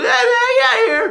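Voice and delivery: very high, slow voice crack. Retelling high school, the guy warning everyone the cops came: imitating a cracking voice. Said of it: "Like his voice is cracking".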